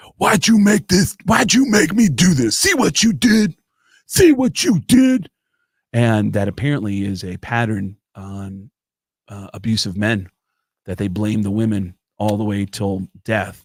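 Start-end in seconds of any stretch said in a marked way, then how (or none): 0.2-5.3 shrill, very high-pitched, accusing yell. Retelling a story of O.J. Simpson at the gravesite: retelling O.J. Simpson yelling. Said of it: "he's yelling like".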